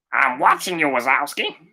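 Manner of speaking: bad put-on cartoon character voice. Reading a quiz question and imitating the line's speaker: awful Monsters, Inc. character impression. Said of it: "That was awful, but that's my impression".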